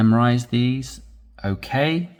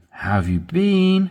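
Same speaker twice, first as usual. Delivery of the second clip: rising pitch on "been"; 7 semitones higher than usual. Demonstrating inflection on a greeting question, with rising pitch at the end. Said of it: "When the inflection goes up, it's showing incitement, excitement, engagement, interest with the question".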